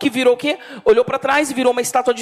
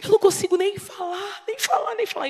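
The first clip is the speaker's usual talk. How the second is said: distressed, out-of-breath, soft, high gasping and panting; 8 semitones higher, 5 dB quieter than usual. Retelling a distressed church woman's words: imitating a breathless distressed woman. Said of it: "desse jeito, ela falava assim".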